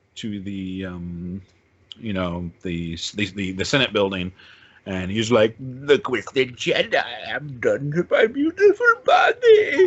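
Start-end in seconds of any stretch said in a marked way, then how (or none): 5.5-9.8 animated, sing-song put-on voice, pitched high and swooping. Retelling the Senate building scene from the movie: Palpatine impression. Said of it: "you like that impression?".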